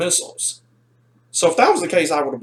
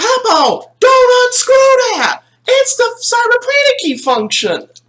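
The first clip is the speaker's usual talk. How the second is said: high, loud screaming. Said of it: "I'm screaming at him".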